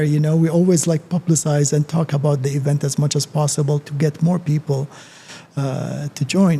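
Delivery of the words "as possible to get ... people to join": ordinary talk, nothing marked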